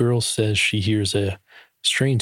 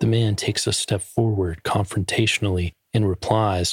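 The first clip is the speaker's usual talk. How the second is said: ordinary delivery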